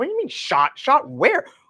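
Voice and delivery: high, flustered, bewildered, disoriented confusion. Retelling her husband's call saying her mom was shot, act out her confused reaction. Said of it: "I was so discombobulated".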